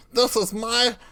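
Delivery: high, gloating gnome villain voice. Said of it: "the gnome Brome two claws up, and he's like".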